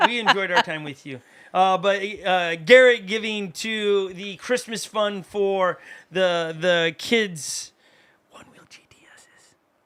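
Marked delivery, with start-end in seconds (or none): 8.3-9.5 secretive, breathy, very quiet whisper under the breath. Mentioning a gift while the kids are in the room, whispering. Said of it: "I have to whisper that".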